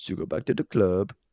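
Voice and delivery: put-on German nightclub owner voice. Doing a requested impression of a film scene line, as a german nightclub owner. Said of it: "some kind of like homoerotic German nightclub owner".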